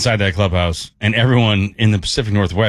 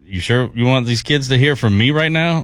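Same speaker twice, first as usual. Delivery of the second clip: put-on joking tone, higher pitch; 4 semitones higher than usual. Speaker retells a team member's self-deprecating remark to the coach: retelling a joking remark. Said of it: "jokingly being like".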